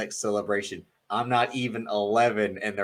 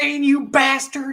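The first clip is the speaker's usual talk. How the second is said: put-on high, loud South Carolina accent, yelled; 7 dB louder than usual. Retelling a wrestling storyline scene about Lita's baby: Matt Hardy South Carolina accent. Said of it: "South Carolina accent of them is kind of spot on".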